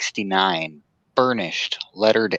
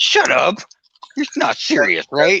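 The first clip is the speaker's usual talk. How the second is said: mock stunned disbelief, very high and drawn out; 10 semitones higher, 4 dB louder than usual. Imitating the other speaker's reaction to a price: imitating astonishment.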